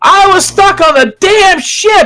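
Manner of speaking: yelling angrily. Voicing Sojin in a game scene, yelling in character. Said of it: "Sojin finally yells".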